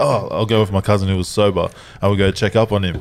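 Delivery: plain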